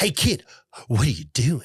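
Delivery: funny, distinctive, pointed comic delivery. Retelling a scene where Billy asks a kid what he's doing: imitating Billy's funny line delivery. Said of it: "so funny how he says it".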